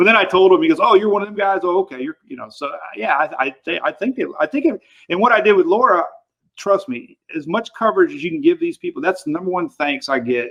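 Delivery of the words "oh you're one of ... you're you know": put-on Louisiana local's accent. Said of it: "had that Louisiana accent".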